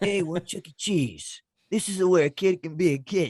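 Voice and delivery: mobster-style voice. Riffing on a kids' restaurant slogan: mobster voice. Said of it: "like the mob type of voice guy".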